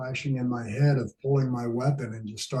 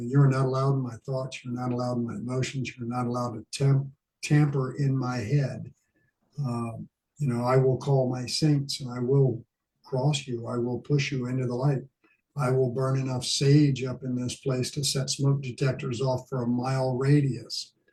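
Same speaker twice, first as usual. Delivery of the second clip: ordinary talk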